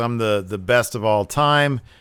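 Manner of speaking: ordinary talk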